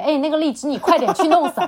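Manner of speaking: impatient tone. Retelling how the other person snapped an order: imitating someone saying it impatiently. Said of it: "非常不耐烦地说了一句".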